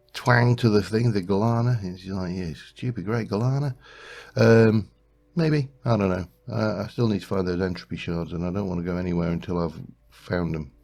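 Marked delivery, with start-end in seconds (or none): 2.3-3.7 bad fake Australian accent, higher. Speaker pronounces a name, in a bad Australian accent. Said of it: "my Australian accent impersonation is terrible".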